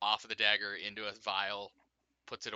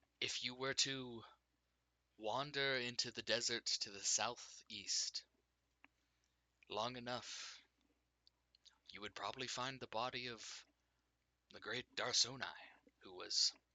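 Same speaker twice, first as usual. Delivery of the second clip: unnatural, otherworldly voice echoing as from the air; 2 semitones higher, 8 dB quieter than usual. A game master voicing a golden-masked being to the players: unnatural echoing voice. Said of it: "is has is wearing a golden mask, has Mhm. no body expressions, and his voice is not natural. It's not a normal voice. It's a fucking echo from the very air itself into you. / is has is wearing a golde".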